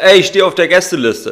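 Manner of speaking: high-pitched yelling. Retelling shouting to the bouncer while trying to get into a club: re-enacted shout. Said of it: "ich schrie dann nur zu dem Türsteher".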